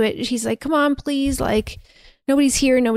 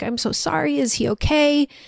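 put-on tearful crying voice, higher; 4 semitones higher than usual. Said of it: "Theo's crying, saying".

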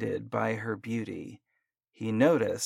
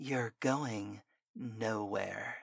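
hissing, close up right at the ear; 9 dB quieter than usual. Reading a story aloud, a woman grabs a man at his car: hissing. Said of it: "she hissed in his ear".

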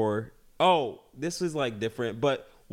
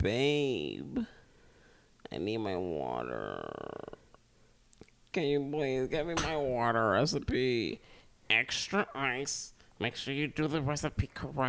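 swooping, fussy sing-song with babe drawn out; 7 dB quieter than usual. Imitating the partner asking to have water brought over. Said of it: "you'd be like".

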